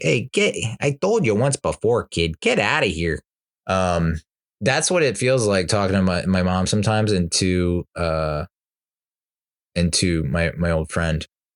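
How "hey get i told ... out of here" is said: put-on swooping Midwestern Chicago accent. Retelling drivers answering a kid peppering them with questions: midwestern chicago accent. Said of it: "the perfect like Midwestern Chicago accent".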